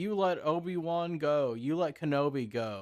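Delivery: annoyed, angry tone. Retelling a movie scene where a character scolds her: imitating someone pissed off. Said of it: "he's pissed off about her letting Kenobi go".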